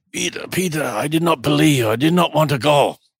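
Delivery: put-on, pretty awful German accent. Retelling what a crying man said to the speaker, in a terrible german accent. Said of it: "in my worst German accent, which is pretty terrible".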